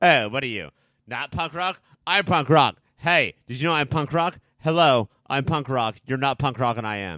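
stiff, scripted-sounding delivery. Giving an impression of an actress's punk rocker dialogue: Aya Cash impression. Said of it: "here's my impression of Aya Cash".

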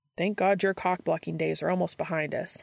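ordinary delivery

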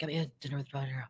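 barely audible, very soft half-whisper. Retelling running lines with a co-star in an elevator: imitating Glenn Close half-whispering. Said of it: "she whisp-".

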